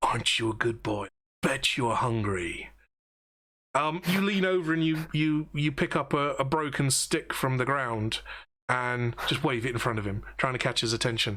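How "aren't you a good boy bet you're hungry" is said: tender, sweet, gentle, low coaxing voice. Guiding a listener on how to coax a dog, very soft and quiet tone. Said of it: "you speak in a very soft and quiet tone".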